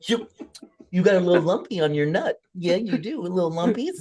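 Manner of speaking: put-on babyish, coddling baby talk voice. Pretending to be a doctor giving a diagnosis: put-on baby talk. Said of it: "in baby talk".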